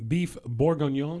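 beef bourguignon in French accent. Announcing a dish name, saying it with a french accent. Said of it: "just like a French guy there".

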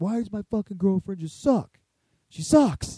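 loud, furious, angry ranting read. Speaker shows how he would read a listener's question, angry reading. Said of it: "angrily read".

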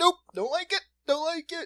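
put-on high, squeaky, scared little kid voice.

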